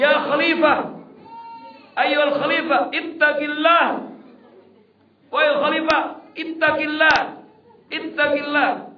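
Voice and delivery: high, loud, desperate, crying shout. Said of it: "ada orang menemuinya teriak".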